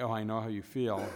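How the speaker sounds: ordinary talk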